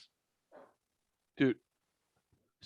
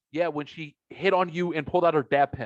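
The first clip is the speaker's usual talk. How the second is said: normal talking voice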